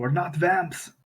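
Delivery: mild protesting cry in character voice. Voicing a character answering the rangers: shouting in character. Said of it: "And then Regis shouts out".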